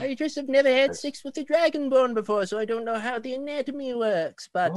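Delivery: put-on very old elderly woman voice. The old lady hunched by the desk speaks, very old lady voice. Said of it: "And you see a very, very old lady hunched over right by the desk, / very old lady hunched over right by the desk".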